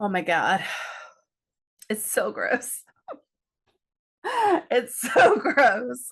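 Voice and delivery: words broken up by gagging and retching. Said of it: "I gagged".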